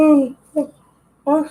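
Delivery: speaking through big yawn, high drawn oh sounds. During a live chat just after eating, the speaker yawns mid-sentence, yawning. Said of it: "sorry for the yawning".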